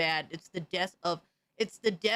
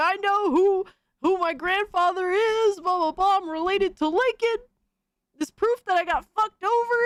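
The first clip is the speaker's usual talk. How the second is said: crazed, high, loud ranting scream; 12 semitones higher, 6 dB louder than usual. Retelling passing a crazy person while visiting a school, imitating a screaming man. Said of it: "this crazy person that was screaming".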